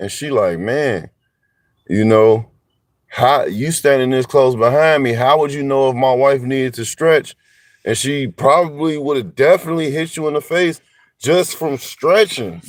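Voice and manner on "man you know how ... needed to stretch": mocking, sarcastic delivery. Retelling what his wife said to the woman behind her: imitating a sarcastic remark. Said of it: "now she getting sarcastic now".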